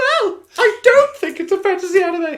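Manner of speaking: bad put-on voice, very high and loud, squeaky. Doing guests' voices to fake a podcast conversation: terrible impression of a guest. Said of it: "That's a terrible impression".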